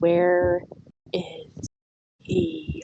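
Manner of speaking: very low, dropped-down, looming voice. In a tabletop game, a character presses forward, looming, and asks very quietly. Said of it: "very quietly says".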